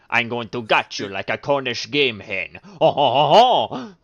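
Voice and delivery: put-on French accent. After telling someone they're not french, a speaker does a french accent impression. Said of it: "that's such a good impression".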